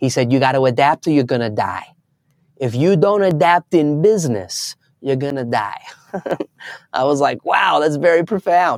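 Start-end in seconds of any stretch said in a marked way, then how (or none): 0.3-5.8 put-on heavy, thick, laid-on New York accent. Retelling what a businessman said about changing strategy: thick new york accent. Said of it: "in his thick New York accent".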